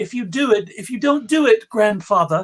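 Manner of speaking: loud, put-on young British street-urchin voice. Retelling how a man's grandchild urged him to do the movie: young british urchin voice. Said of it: "now I'm I'm doing the urchin voice, the young British urchin voice".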